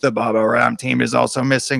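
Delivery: scratchy mechanical robot voice. Reading a gamebook aloud, voicing the robot: scratchy mechanical robot voice. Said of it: "continues speaking in its scratchy mechanical voice".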